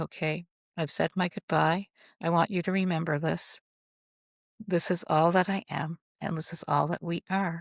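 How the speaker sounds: usual speaking voice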